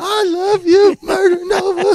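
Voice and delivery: put-on very high, very loud, drawn-out blubbering wail. Joking that he is in the bathroom, imitating him crying. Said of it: "he's crying in the bathroom right now".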